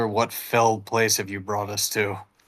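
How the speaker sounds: true half-whisper, breathy and hushed, no voice. Among skeletons, Hyperion pulls Brill close by his clothing, Hyperion half-whispering. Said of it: "just sort of whisper".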